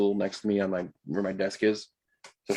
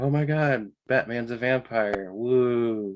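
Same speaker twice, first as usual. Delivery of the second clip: mock, imitated excited tone; 3 semitones higher than usual. Recounting how the listeners reacted to a Batman trailer, imitating Mariah gushing excitedly. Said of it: "Mariah's on this side saying like".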